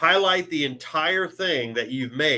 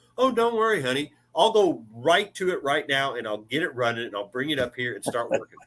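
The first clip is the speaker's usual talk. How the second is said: mock bitter sarcasm with anger underneath. Retelling own reply to a spouse's request: imitating own sarcastic anger. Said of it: "And that sarcastic anger".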